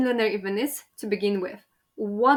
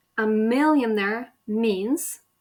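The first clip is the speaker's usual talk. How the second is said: brief stop after the word 'means'. Teaching how words in a sentence join together, with a pause after 'means'. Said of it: "so he did a pause here".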